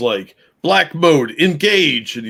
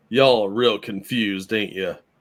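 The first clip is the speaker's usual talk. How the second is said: heavy put-on Southern drawl, laid on thick; 3 semitones lower, 3 dB quieter than usual. Imagining what the person in the robe said: imitating a thick Southern drawl. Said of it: "in a thick Southern drawl say".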